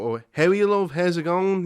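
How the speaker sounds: strong put-on Dublin accent. Answering a question about Irish accents: imitating a strong Dublin accent. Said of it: "really strong Dublin accents".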